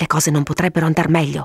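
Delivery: plain reading voice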